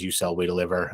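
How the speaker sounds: ordinary talk, nothing marked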